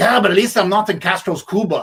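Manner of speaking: put-on loud, high-pitched Cuban accent. Retelling Luis Tiant's reply to a Hall of Fame remark, doing a Luis Tiant impression. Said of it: "you're going to have to excuse my accent".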